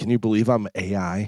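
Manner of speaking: low, sultry, seductive bedroom voice. Retelling a video of a woman in bed: imitating a sexy woman's voice. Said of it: "just all sexy".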